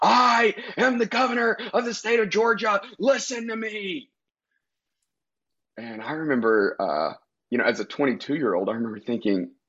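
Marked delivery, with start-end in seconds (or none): 0.0-4.1 play-acted shrill, very high yell. Retelling a tense meeting where a voice yelled over everyone: imitating the governor yelling. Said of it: "this voice that was yelling above everyone".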